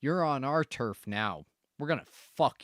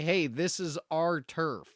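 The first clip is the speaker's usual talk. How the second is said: plain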